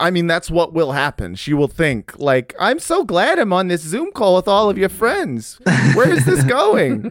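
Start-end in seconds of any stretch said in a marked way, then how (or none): 2.6-7.1 put-on Italian mother voice. Imagining a friend's mom on a Zoom call, impression of a friend's mom. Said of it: "This is my impression of your mom".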